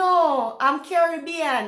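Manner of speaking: normal talking voice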